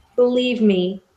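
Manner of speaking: super pleasant but clearly unhappy, forced pleasantness. Speaking in character to a man held off the ground: super pleasant but clearly unhappy. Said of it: "super pleasant, but, like, you can tell I'm not happy".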